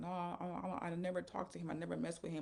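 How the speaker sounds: put-on, stumbling, hysterical crying and sobbing. Retelling pleading with him on the bed: retelling own crying plea. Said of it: "I was crying".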